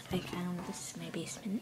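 soft, hushed whisper. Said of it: "Sorry, I'm whispering".

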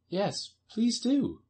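earnest, high-pitched, begging, pleading tone. Alice joins in asking the Dormouse for a story, pleading. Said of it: "pleaded Alice".

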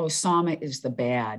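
ordinary talk

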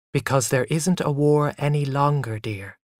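ordinary talk

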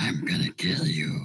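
very deep, masculine put-on voice. Showing on request how the character would sound, really deep masculine voice. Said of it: "does she get like a really deep masculine voice?".

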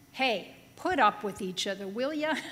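play-acted breezy, casual, offhand everyday tone. Imitating a holy apostle writing the words casually: imitating the apostle casually. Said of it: "this holy, sacred apostle writing".

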